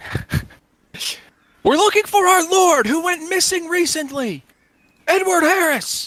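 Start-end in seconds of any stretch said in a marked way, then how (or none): 1.6-6.1 high, loud shouting. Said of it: "one of them kinda shouts out".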